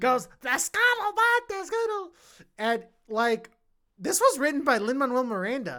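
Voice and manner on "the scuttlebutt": grating impression pitched much higher. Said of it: "in the worst grating voice ever".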